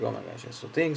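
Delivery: ordinary delivery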